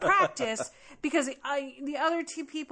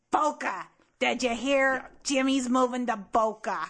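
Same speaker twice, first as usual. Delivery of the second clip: put-on raspy voice of an old longtime-smoking mother; 4 dB louder than usual. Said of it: "mother who's been smoking for 40 years".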